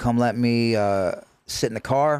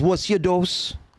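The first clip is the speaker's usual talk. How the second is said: put-on Jamaican accent, pitched up; 7 semitones higher than usual. Retelling what a methadone nurse asked them, put-on Jamaican accent. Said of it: "I may try to do my Jamaican accent".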